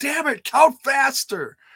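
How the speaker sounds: very high, shrill, loud, exasperated screaming. Recounting how he reacted at the end of the match: retelling a scream at the ref. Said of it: "he was screaming at the ref".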